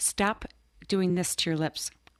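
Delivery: put-on English accent. Quoting what a woman on set would tell her, in a put-on English accent. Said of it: "in her English accent and say".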